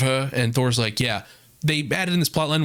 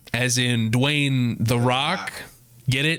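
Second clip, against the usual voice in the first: ordinary talk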